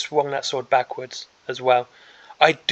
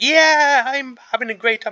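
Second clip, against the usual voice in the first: put-on jolly, loud, high, cheerful frog voice; 9 semitones higher, 5 dB louder than usual. Describing a frog model, speaker gives the frog a voice: voicing a happy frog. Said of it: "he is such a happy guy".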